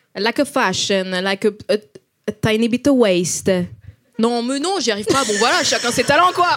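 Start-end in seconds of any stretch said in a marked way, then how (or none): 0.2-3.5 put-on Italian accent in English. Speaker tries playing an Italian woman speaking English: attempted Italian accent in English. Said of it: "une italienne qui parle anglais".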